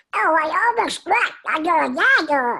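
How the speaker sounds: very high-pitched, fast, sad duck voice. Showing the cute little duck character he got the job for: sad Little Quack duck voice. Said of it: "he's always sad".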